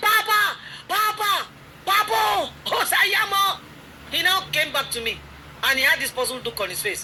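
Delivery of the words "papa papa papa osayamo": mock very high, very slow, drawn-out shout. Retelling calling to her son as he sped off on his horse: imitating her own shouting. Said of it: "I started shouting".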